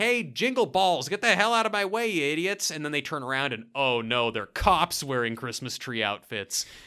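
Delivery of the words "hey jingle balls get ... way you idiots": high, rude, acted-out street yelling. Retelling a movie scene where a character yells at two men: imitating someone yelling. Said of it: "he's yelling at him like".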